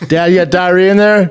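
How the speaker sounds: mock child hollering, loud and high. A parent repeating what the child yelled: imitating a kid's loud yell. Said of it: "so loud".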